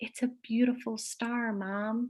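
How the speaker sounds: put-on sweet small kid voice, soft and slow. Mother retelling her son calling to her near a volcano: imitating Cooper's sweet little voice. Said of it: "Cooper's sweet little voice, he goes".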